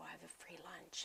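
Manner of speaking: acted-out whisper. Retelling a boy asking for his free lunch in the cafeteria, whispering. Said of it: "he like kind of whispers like".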